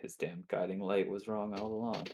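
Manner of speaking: muttering under breath. Voicing a character who mutters a complaint: muttering under breath. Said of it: "under my breath".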